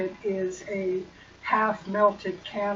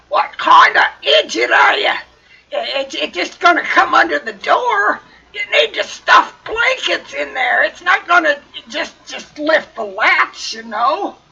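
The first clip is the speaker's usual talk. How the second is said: rough, really gruff voice, very loud; 7 semitones higher, 10 dB louder than usual. Telling Cashin what the voice behind the door says, really gruff voice. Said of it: "you hear the gruff, really gruff voice say".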